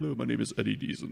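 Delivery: deep, rich, resonant baritone. Imitating how the actor Eddie Deason talks: Eddie Deason voice. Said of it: "this deep, rich baritone voice".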